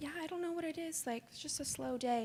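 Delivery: polite, sweet service voice. Retelling answering customers about the slow day: imitating her high customer service voice. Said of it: "It's customer service voice".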